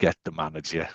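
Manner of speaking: mock muttering under the breath, aside. Quoting a man telling the fella getting drinks, retelling a muttered aside. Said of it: "under his breath".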